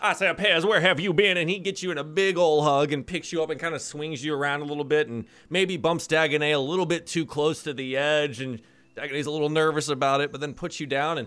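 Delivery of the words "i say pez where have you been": put-on blustery rooster voice, louder. Voicing a father calling into the house: Foghorn Leghorn voice. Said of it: "It's your dead foghorn leghorn".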